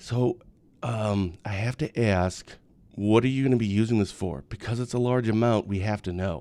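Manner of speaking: quiet, discreet, slow, leaning-in delivery. Retelling a bank cashier's question about a cash withdrawal: imitating cashier speaking quietly. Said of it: "the cashier leans over and kinda quietly says".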